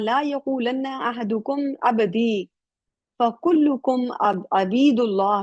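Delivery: normal talking voice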